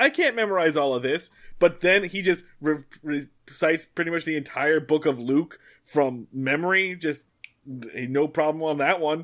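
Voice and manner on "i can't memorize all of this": upset, high, pitched-up, complaining tone. Retelling Linus complaining about memorizing lines: imitating upset Linus.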